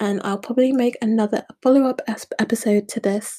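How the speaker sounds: stuttering, stumbling restart of a word.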